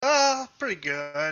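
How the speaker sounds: sad, glum, downcast, down-in-the-mouth voice. Answering someone's greeting, sounding sad. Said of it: "Why do you sound sad?".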